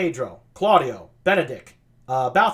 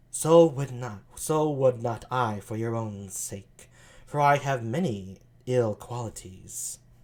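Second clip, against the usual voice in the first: put-on sultry voice, lower and quieter; 6 semitones lower, 5 dB quieter than usual. Reading a Shakespeare scene aloud, voicing Margaret: sultry Margaret voice. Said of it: "sultry voice like that".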